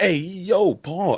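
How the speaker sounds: put-on New Jersey accent. Speaker drops into the New Jersey accent again, in a New Jersey accent. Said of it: "I don't know why that accent comes up".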